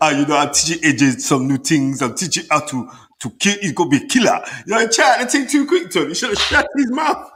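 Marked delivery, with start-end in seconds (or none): 0.0-4.4 put-on Nigerian accent, spoken slower. Telling a story about a boxing camp, doing an attempted Nigerian accent as Ali Bashir. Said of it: "That word no Nigerian accent".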